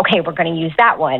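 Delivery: ordinary delivery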